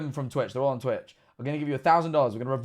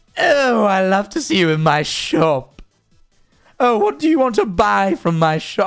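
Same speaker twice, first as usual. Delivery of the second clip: snooty cartoon baby voice, high, slow and posh; 3 semitones higher, 6 dB louder than usual. Like a haughty shopkeeper with a plummy, exaggerated accent greeting a customer, fussy and sing-song and faintly smug. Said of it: "he essentially gave the voice of Stewie Griffin".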